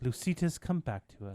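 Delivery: put-on very hushed, low, sweet, loving British accent. Asked about a woman's tone when she spoke, imitating her sweet British voice. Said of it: "she British?".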